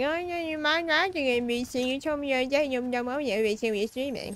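high-pitched animated cartoon character voice. Acting out what she is going to say, in a South Park character voice. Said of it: "You sound like a South Park character".

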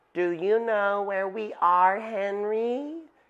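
soft, quiet-spoken voice. Annie leans close to the pteranodon Henry and asks him softly. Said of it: "She asked softly".

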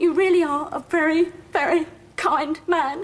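tearful voice choked with gratitude, welling up. Thanking the man who offered to arrange a check, choking up. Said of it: "I am welling up here".

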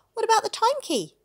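sudden outburst, blurted very high and very loud. Ben responds to the driver's story of a stolen key, blurted out. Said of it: "Ben blurted".

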